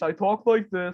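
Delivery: put-on douchey, obnoxious-sounding voice. Recalling a short film character, a douchey school IT guy: douchey school IT guy voice. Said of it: "where I spoke in that voice".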